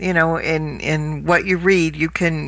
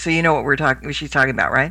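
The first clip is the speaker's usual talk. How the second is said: ordinary talk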